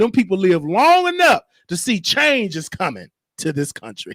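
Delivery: ordinary delivery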